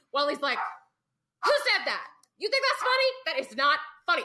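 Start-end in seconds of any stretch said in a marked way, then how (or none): 1.4-4.2 high, swooping, theatrical put-on angry posturing. Retelling a man who stopped, backed up and confronted the speaker: mock-angry posing. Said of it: "angry posing at me".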